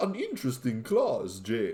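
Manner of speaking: swooping, sing-song, intoned vampire count voice. Mimicking the co-host's Dimitri voice, a Dracula-like voice. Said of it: "it sounds like Dracula".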